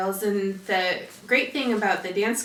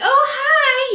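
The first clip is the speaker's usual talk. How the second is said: very high, raised, put-on girlish voice; 11 dB louder than usual. Retelling greeting a man who came stomping over, in a girlyish voice. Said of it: "in my, you know, girlyish voice".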